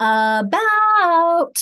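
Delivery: about stretched long. Teaching kids to find the accented syllable: stretched "about". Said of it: "Notice how I'm stretching the about".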